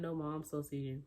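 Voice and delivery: ordinary talk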